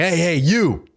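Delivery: fake-angry, pissed-off call-out, pitched high. Retelling rolling up on people, acting angry: imitating own fake pissed-off tone. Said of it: "acting like I'm pissed".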